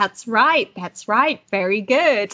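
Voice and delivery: mock snide, insincere, sarcastic tone. Speaker retells a clown on a show clapping at Elise, retelling sarcastic praise. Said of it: "clapping sarcastically".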